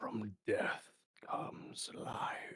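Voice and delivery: very soft, slow, drawn-out, hushed whisper. Voicing a mysterious voice the players hear: whispering voice. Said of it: "you hear the voice whisper".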